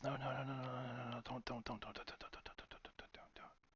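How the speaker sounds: tiny, barely audible, very quiet little voice. Describing a frenzy, the narrator voices a tiny little inner voice. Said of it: "Tiny little voice inside says".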